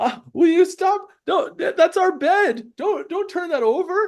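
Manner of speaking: very high, loud, frightened pleading. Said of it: "They sound really scared".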